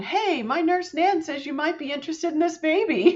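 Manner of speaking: play-acted bubbly voice, pitched way up. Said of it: "all bubbly on the other end".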